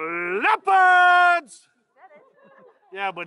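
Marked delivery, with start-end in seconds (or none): 0.0-1.7 high, loud, excited announcer-style shout. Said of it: "he says it with no enthusiasm".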